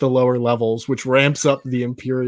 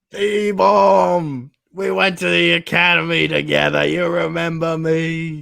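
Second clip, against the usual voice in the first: put-on drawn-out, creaky, rough, slow drunken voice; 4 semitones higher than usual. A drunk Imperial officer addresses the carbonite freezing attendant, drunk. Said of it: "And he's drunk. / he's drunk. And he's drunk. So like he fucks it up. The Imperial officer like messes it all up. / The Imperial officer like messes it all up. / he's drunk".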